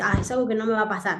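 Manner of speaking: ordinary delivery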